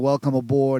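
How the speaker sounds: plain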